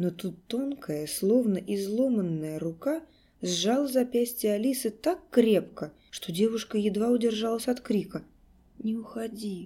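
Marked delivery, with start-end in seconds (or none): 8.8-9.7 hoarse, raspy, rough-throated voice. A child grips the girl's wrist as she gets up to go: hoarse. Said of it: "сказал ребенок хрипло".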